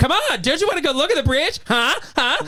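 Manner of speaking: shrill scream, very high-pitched. Retelling running into a bar and urging strangers: retelling own screaming. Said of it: "comes running in screaming".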